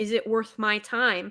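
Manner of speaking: normal talking voice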